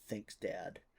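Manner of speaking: smug, muttered aside under the breath. A player's character answers the departing god's reassurance with a smug mutter under breath. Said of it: "I will smugly, under my breath".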